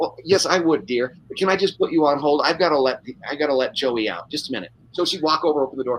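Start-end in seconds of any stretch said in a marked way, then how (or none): 0.0-4.7 put-on grandmotherly voice, like on the phone. Retelling a phone interview with an animal-loving woman: imitating a grandmotherly caller. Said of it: "It's like talking to grandma".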